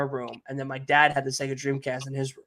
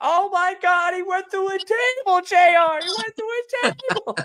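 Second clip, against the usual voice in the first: sports announcer voice, screaming, very high and frantic; 4 dB louder than usual. Retelling childhood wrestling play, commentating a match: Jerry Lawler impression. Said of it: "that was my Jerry Lawler".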